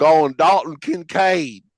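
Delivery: phony, high-pitched put-on country-boy accent. Answering a request to name a pick in a country accent. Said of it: "in your best, um, country accent".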